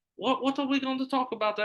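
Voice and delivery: put-on very high, botched, horrible British accent. Retelling a friend's reply to a podcast invite, in a bad British accent. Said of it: "that was a horrible British accent".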